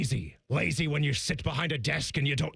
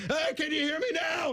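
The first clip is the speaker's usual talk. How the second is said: raised, pitched-up voice; 13 semitones higher than usual. Retelling a caller's last try on air: imitating a caller raising his voice. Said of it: "And he raises the voice".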